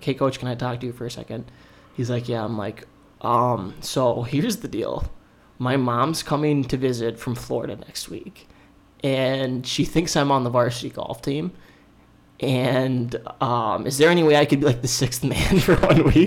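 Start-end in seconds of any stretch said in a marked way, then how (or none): none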